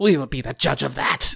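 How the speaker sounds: snarled, growling, rough and creaky. Game master voices a half-goat creature answering a traveler: snarling. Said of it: "the other snarls".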